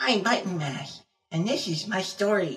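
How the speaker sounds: put-on high-pitched kid voice. Explaining they can never reach a high kid tone, failed Button Mash kid voice. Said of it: "a high-pitched kid tone".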